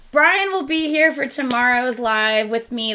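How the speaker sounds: ordinary delivery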